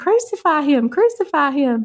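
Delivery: very thick, slow Southern drawl. Retelling a church play's crowd repeating as Jesus carries the cross, imitating a thick Southern accent. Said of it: "in the most Southern accent you've ever heard".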